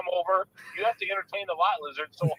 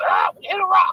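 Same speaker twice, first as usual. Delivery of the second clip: shrill, very loud, high parrot-like squawk; 11 semitones higher, 10 dB louder than usual. Retelling a story about a pirate and his parrot, the parrot speaks: parrot voice. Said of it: "and the parrot goes".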